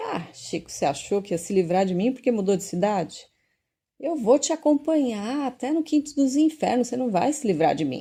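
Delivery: mocking, gloating taunt spoken through laughter. Retelling what a tormenting spirit said to a man who moved, retelling a laughing taunt.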